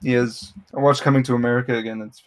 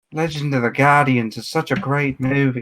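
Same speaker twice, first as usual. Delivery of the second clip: fake, bad Irish or Scottish accent. Holding a DVD case and trying a voice as Lee, imitating Lee's accent badly. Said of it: "I'm not good at uh, Irish accents or Scottish accents".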